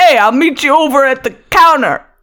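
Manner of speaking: put-on Brooklyn accent, pitched high. Trying out a Brooklyn accent while others say nope: put-on Brooklyn accent. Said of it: "How do you do a Brooklyn accent?".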